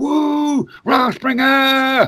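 put-on drunken party yell. Showing how he copies the yell at gatherings: imitating a drunk scream. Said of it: "throw the devil horns up".

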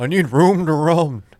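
high-pitched talking-horse voice. Joining a bit about a trapped circus horse: Mister Ed voice. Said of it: "Mister Ed".

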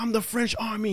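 put-on high-pitched, in-your-face, aggressive drunken voice. Retelling what a drunk man said in a confrontation: imitating a drunk man. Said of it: "He was, like, drunk and shit".

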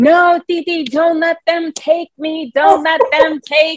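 put-on shrill, very high, pleading little-kid yell. Recalling being carried out of an aunt's house as a child: retelling own childhood yelling. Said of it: "And I'd be yelling".

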